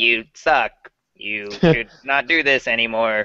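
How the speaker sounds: mechanical, robot-like voice. Speaker imitates the PS4 reading stream comments aloud: PS4 robot voice. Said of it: "robot in the voice".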